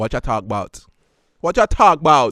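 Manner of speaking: loud, very bad fake Caribbean accent. Bantering on a show, the speaker asks a question in a bad caribbean accent. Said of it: "That is the worst Caribbean accent".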